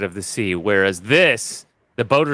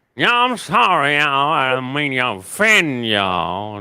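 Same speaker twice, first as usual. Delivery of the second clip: easygoing, relaxed put-on Cajun accent; 4 semitones higher than usual. Redoing the apology to the Cajun audience in Cajun: Cajun accent. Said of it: "in Cajun".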